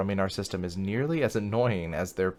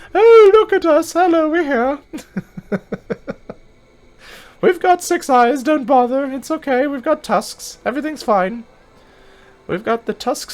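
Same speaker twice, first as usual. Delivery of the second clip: very high, loud, squealing full falsetto; 13 dB louder than usual. Voicing the six-eyed, tusked Odo: falsetto Odo voice. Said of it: "Is this high pitched like falsetto?".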